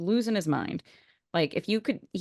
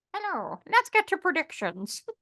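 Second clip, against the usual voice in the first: put-on very high, throaty cat voice; 9 semitones higher than usual. Speaking for the cat who demanded to join in, voicing Dobby the cat. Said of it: "you sound different today. You got something in your throat".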